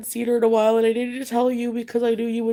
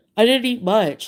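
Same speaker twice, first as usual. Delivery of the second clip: bristling, guarded, defensive, on-the-back-foot tone; 3 dB louder than usual. Retelling his answer when she questioned his dinner, mock-defensive reply. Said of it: "he got really defensive".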